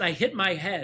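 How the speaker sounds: ordinary delivery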